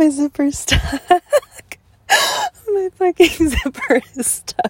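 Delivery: loud, laughing through the words. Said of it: "I'm laughing so hard".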